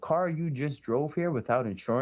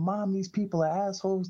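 put-on high, weepy little-girl voice, mid-tears; 7 semitones higher than usual. Retelling a girl at the DMV telling her mom off: imitating a crying girl. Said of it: "This little girl starts crying".

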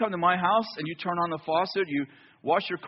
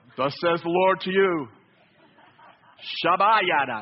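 grand, godlike voice speaking through. Speaker demonstrates the changed voice used to prophesy: Orson Welles-like prophet voice. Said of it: "So you change your voice".

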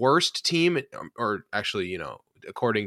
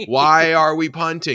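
put-on yelling, higher and louder; 7 semitones higher, 9 dB louder than usual. Retelling own reaction while watching the game, imitating own yelling. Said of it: "I was just screaming at the".

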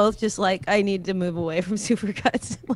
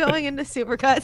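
talking through laughter, pitched higher; 4 semitones higher than usual. Picturing another speaker getting cheap haircuts when young, laughing while talking. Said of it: "You're crying from laughter".

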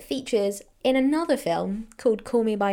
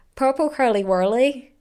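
loud put-on Irish brogue; 3 semitones higher, 5 dB louder than usual. Pressed to show the accent, saying the phrase in an irish accent. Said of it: "I can do an Irish accent".

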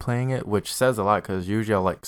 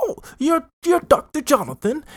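mock bad British accent, higher and louder; 5 dB louder than usual. Mocking a game's bad voice acting: imitating bad fake British accent. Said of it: "That's literally how the voice acting is".

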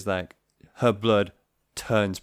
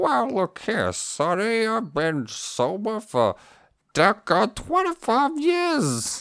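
put-on very high, swooping old lady voice; 11 semitones higher than usual. Asked what a booze hawker would sound like, the speaker performs an old lady booze hawker voice. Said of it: "Do you want the old lady as well or just the booze hawker?".

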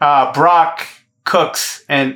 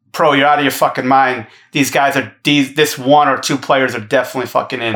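normal talking voice

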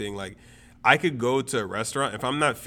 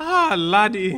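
shrill, very high, squealed Irish leprechaun voice; 9 semitones higher, 7 dB louder than usual. Joking with friends, the speaker slips again into the Lucky Charms leprechaun voice. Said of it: "Why do you always turn into the... leprechaun".

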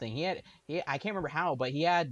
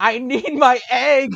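very high, very loud, drawn-out screaming; 11 semitones higher, 16 dB louder than usual. Doing a bit as Mothra on the island: Mothra screaming. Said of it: "screaming at them".

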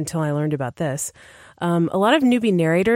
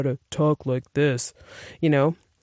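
put-on male voice with lowered pitch; 3 semitones lower, 3 dB quieter than usual. A narrator showing how female narrators do male voices, lowered-pitch male voice. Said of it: "shift the pitch down".

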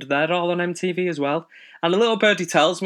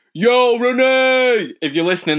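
put-on brash, shouted Brooklyn New York accent; 3 semitones lower than usual. You're jokingly addressing someone you admire, putting on a loud American accent and hamming up the attitude. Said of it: "That was me speaking like I'm from New York".

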